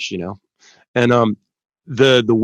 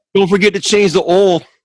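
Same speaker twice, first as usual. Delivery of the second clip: put-on Baltimore accent, pitched up, for laughs; 9 semitones higher, 4 dB louder than usual. Playing a local character welcoming people to Poopersville: put-on Baltimore accent. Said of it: "is that Baltimore?".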